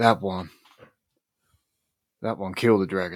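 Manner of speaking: muttered quietly, under the breath. Voicing a character looking at faces of his ancestral line: said under his breath. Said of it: "he'll say under his breath".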